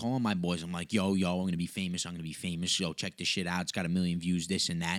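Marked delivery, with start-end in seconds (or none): none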